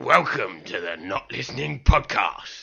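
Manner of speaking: menacing, over-intense, creepy delivery. Rehearsing a podcast intro after being told to say it with more intensity.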